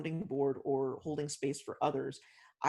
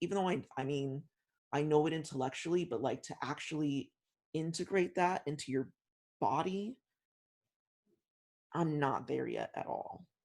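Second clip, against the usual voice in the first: slow, choked-up, tearful speech. Speaker talking about still working on feeling deserving: tearing up. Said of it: "I'm tearing up right now".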